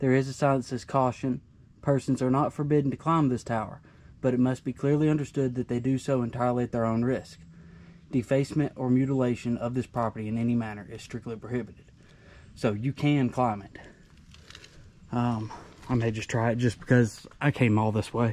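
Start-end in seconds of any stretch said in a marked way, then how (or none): none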